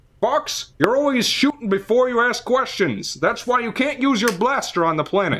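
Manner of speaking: very high, goofy, half-hearted silly cartoon voice. Mocking a game's voice acting, the speaker does a character lecturing Fox: silly, stupid voice. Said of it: "stupid voices right now".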